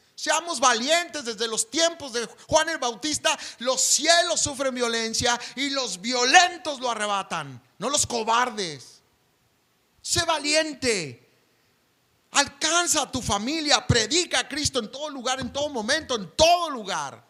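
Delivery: voice lifted up. Addressing the brothers and sisters at church, in a raised voice. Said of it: "eso produce ese ahínco en mi vida de levantar la voz".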